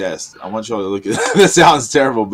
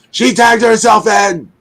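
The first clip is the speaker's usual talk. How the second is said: shrill, very high, loud screaming in background; 12 semitones higher, 6 dB louder than usual. Retelling what was heard in the background while Miley Grace tried to talk, imitating Bozilla screaming. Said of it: "like she's just screaming".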